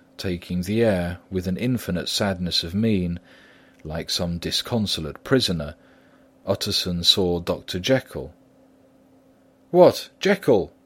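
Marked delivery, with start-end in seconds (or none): 9.8-10.7 very high, raised calling-out cry. Utterson, seeing Dr. Jekyll at a window, cries out. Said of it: "he cried".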